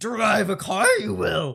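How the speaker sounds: rough, creaky, grunting voice. Joking that someone sounded like Yoda: Yoda voice. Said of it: "She sounded like Yoda".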